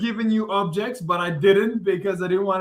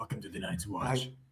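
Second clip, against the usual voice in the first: deep-voiced, low, hushed whisper; 8 semitones lower, 14 dB quieter than usual. Showing how the line should sound in a low voice. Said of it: "But you have to do the low voice too".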